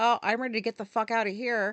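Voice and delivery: normal talking voice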